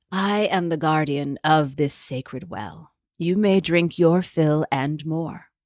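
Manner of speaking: rough, croaking, low, gravelly hag voice. Narrator voicing the well's guardian speaking to thirsty travellers, low, gravelly voice. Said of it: "a low, gravelly voice".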